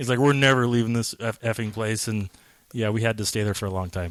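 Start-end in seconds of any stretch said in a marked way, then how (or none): none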